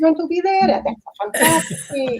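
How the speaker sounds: high, hammy, horribly bad Italian accent. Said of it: "My horrible Italian bad accent".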